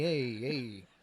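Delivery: New York accent impression. Showing how a New York speaker sounds: Uncle Tony New York voice. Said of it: "like, Uncle Tony".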